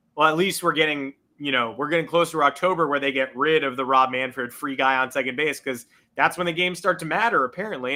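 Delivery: ordinary delivery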